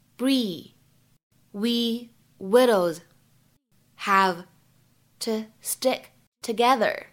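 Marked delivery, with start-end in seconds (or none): 1.5-7.0 slow, drawn-out delivery. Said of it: "失去爆破的处理".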